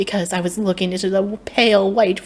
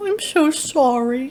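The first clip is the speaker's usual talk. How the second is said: timid, bashful, shy, slightly high voice; 6 semitones higher than usual. Speaking to the narrator, he answers in a shy voice. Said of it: "he said in a shy voice".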